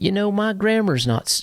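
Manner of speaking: shifting into a southern US accent. Talking about grammar habits, slipping into a Southern accent. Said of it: "a Southern accent came out".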